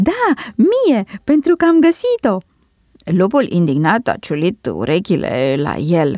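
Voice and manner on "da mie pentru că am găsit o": gleeful, joyful, much higher, slower. Narrating a fable, the lark answers the wolf and the fox, joyful. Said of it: "a sărit într-un picior bucuros".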